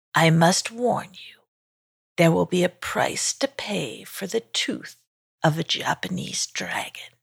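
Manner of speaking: soft, creaking voice of an ancient tree dragon. Narrator reading a story, voicing a forest dragon made of trees, creaky forest dragon voice. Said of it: "said the forest dragon in a creaky voice. / [name] looked up to see a forest dragon made of trees who was staring right down at him. / said the forest dragon in a creaky voice. / I have been in this f".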